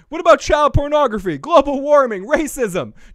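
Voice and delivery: very high, loud, shrieking blurted screaming. Retelling how Trish blurted out serious topics: imitating Trish screaming. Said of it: "Trish starts screaming".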